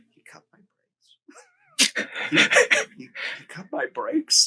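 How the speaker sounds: very high, slow mutter under the breath. Speaker retelling a performer's unscripted line during filming, retelling a mutter under breath. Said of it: "he says under his breath".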